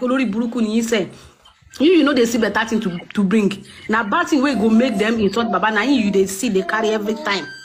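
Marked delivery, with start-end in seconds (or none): none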